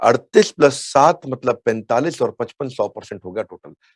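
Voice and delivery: ordinary delivery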